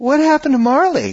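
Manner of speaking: mock bewildered innocence, very high, confused. Retelling what she asked as he carried her out after the movie, imitating total confusion. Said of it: "just totally confused".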